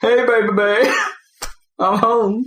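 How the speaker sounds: very high, loud, slow, drawn-out call. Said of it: "is that your [name] impression?".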